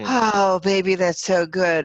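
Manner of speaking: sighing words with breath. Demonstrating a deep sigh combo for a listener: voice and breath combined. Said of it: "that's even voice and breath".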